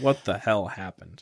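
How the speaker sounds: ordinary talk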